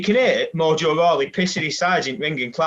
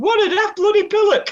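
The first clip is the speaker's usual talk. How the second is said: dead squeaky, very high-pitched shout; 4 dB louder than usual. Retelling what someone shouted at a man, imitating a squeaky shout. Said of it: "in this dead squeaky voice".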